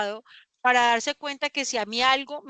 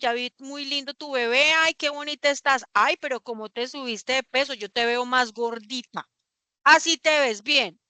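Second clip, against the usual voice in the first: usual speaking voice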